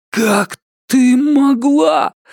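very high-pitched, breathless, panting outcry. Richard, kicked in the stomach by the huntress, cries out to her, panting. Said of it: "тяжело дыша воскликнул он".

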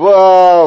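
astonished, surprised, with drawn-out ba. Narrator reading a novel, voicing a character's sudden exclamation, surprised. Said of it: "удивленно сказал Шико".

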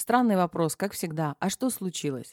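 plain reading voice

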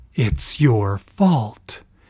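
low, voiced stage whisper. Reading a woman repeating herself to a man after shouting, quiet half-whisper. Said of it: "this time in a quiet whisper".

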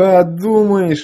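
high, contemptuous, scornful, drawn-out drawl. Narrator reads Andrey answering the weapons specialist, contemptuous drawl. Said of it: "Презрительно протянул Андрей".

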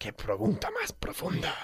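high, soft, mock-awed joking whisper.

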